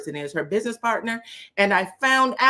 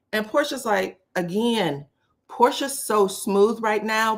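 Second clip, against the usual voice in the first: ordinary talk, nothing marked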